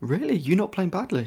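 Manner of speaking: high, teasing, mock disbelief.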